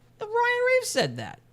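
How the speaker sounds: sudden falsetto. Denying having said it and pinning it on someone else, in falsetto. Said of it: "I don't know why I went into a falsetto there".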